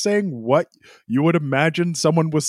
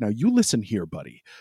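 stern scolding with a jabbing, finger-wagging rhythm; 5 semitones lower, 4 dB quieter than usual. Imitating someone wagging a finger in another's face: imitating finger-wagging scolding cadence. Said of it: "whatever you think a finger's doing when someone goes".

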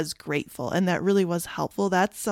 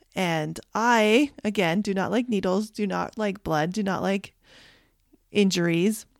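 ordinary talk

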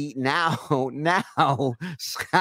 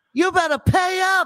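mock furious scream, very high and loud; 6 dB louder than usual. Retelling how Scott screamed through the halls: imitating Scott screaming. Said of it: "screaming through the fucking halls like a bull".

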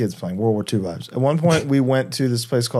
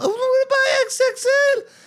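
put-on very high-pitched little-kid holler. Retelling how a kid kept yelling to his mom, imitating a kid yelling. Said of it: "Kid is keeps yelling to his mom".

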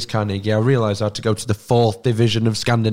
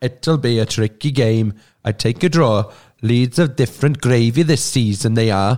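speaking with Welsh accent. Asked to read an opposition forum post aloud: reading in a Welsh accent. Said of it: "Can you read it in a Welsh accent".

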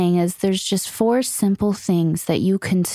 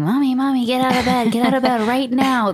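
put-on excited, screaming little toddler voice; 4 semitones higher than usual. Retelling a three-year-old running into the room: imitating a child screaming. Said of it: "running in my room and screaming".

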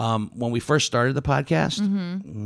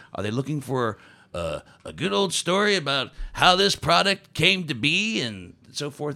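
put-on history-telling narrator voice; 4 semitones higher than usual. Talking about visitors who come to whiskey tastings, in a history voice. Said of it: "that's my history voice".

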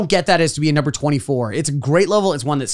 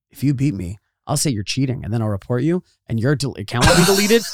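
sincere, earnest, matter-of-fact, dead-serious tone; 3 semitones lower than usual. Retelling what his Fortnite opponent said, imitating someone earnest. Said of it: "with every earnest bone in his body and goes".

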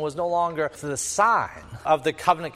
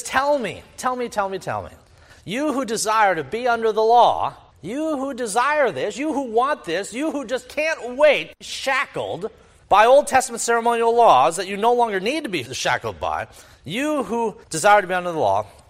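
biting, sarcastic, needling, challenging tone; 5 semitones higher, 3 dB louder than usual. Acting out Paul scolding the Judaizers: sarcastic Paul voice. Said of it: "he's sarcastically saying".

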